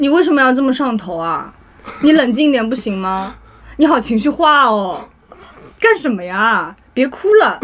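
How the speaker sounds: faux-soothing, snide, passive-aggressive sarcasm, laid on thick. Mocking another speaker who just called them an idiot; snide sarcastic tone. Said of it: "极尽我的阴阳怪气".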